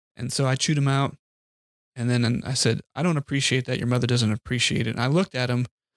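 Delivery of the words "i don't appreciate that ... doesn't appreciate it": ordinary talk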